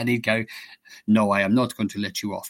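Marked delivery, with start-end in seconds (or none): 1.1-2.5 imitated Danish accent. Retelling what another player said to them after a mistake, in a danish accent. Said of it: "Great Danish accent".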